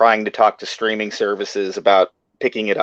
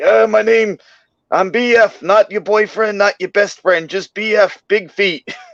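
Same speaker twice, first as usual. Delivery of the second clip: put-on very high-pitched old hermit voice; 11 semitones higher, 4 dB louder than usual. Riffing in character while writing an episode, playing Bigfoot as an old woods guy. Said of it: "he was like this old guy in the woods".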